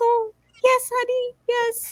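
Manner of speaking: tiny, very high-pitched, sweet-talking little voice. Looking at a couple's proposal photo, wondering if he talks this way: little high voice. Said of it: "does like the little high voice".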